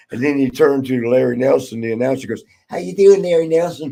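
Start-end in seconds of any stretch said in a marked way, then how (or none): 2.7-4.0 voice pushed very high, squeaky. Acting out a man who came out and turned to the announcer, in a real high-pitched voice. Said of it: "with a real high pitched voice".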